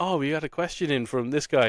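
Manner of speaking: ordinary talk, nothing marked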